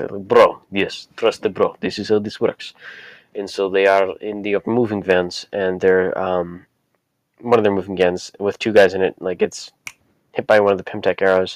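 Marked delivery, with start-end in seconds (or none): 0.3-2.7 put-on Russian accent. Recapping a story, quoting the Tracksuit Mafia, Tracksuit Mafia Russian accent. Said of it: "in their Russian accents".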